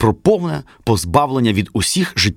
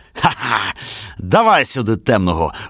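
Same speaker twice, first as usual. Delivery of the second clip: put-on very drunk, barking voice. A very drunk man barks out a demand: drunken barking. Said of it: "гаркнув уже крепко п'яний Павіан".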